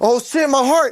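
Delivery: panicky outburst. Retelling smoking weed and a racing heart: imitating own past panic. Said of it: "I'm like".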